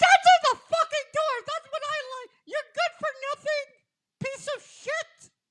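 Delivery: very shrill, furious, high-pitched angry screaming. Storyteller recounts a woman yelling at the guys through the door; retelling a woman screaming. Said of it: "because she's screaming".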